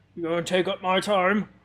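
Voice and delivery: orcish man voice. Voicing an orcish man complaining about his name: orcish man voice. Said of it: "seven-foot-tall orcish man stands there".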